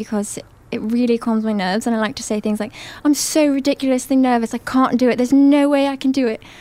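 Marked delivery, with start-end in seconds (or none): 3.0-6.4 loud, high-pitched British accent. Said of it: "I really like to do a British accent".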